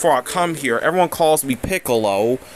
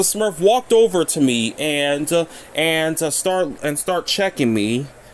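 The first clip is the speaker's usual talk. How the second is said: plain reading voice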